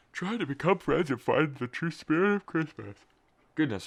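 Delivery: talking through a yawn. Speaker, just woken up, recaps a story for listeners; yawning while talking. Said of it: "I'm yawning".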